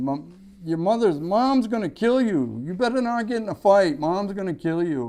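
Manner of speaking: mock screaming, high-pitched. Retelling a sister's warning before a fight at the bus stop: imitating someone screaming. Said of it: "my sister was screaming at me".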